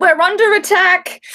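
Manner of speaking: high, full-voice shouting at the top of the lungs. Acting out a character raising an alarm at night: yelling as loud as possible. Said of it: "I yell out, as loud as I can".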